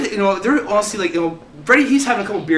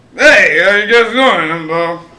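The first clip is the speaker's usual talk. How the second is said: mock drunk man speech, louder; 6 dB louder than usual. Retelling what a drunk guy said in conversation: imitating a drunk guy. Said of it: "he's drunk as shit".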